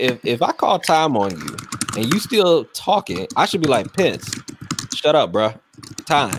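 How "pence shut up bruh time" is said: ordinary talk, nothing marked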